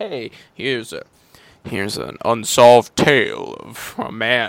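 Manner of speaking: booming, slow mystery-show narrator voice. Imitating the Unsolved Mysteries host introducing the story: Robert Stack voice. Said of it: "I'm trying to do, uh, what's his name from Unsolved Mysteries".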